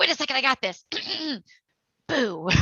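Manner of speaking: high, goofy, silly, jokey voice. Retelling what they say to guests already out of the haunt: silly voice. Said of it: "usually in a silly voice".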